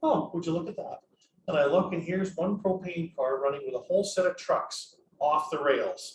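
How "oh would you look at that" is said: unruffled, composed, calm police-officer tone. Retelling watching a train go by, doing Dick's cool, calm RCMP voice. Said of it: "says in his cool, calm R C M P voice".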